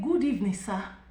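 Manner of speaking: plain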